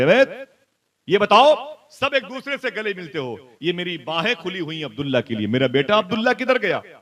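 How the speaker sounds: angry, scolding voice. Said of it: "काफिले वालों से डांट करके".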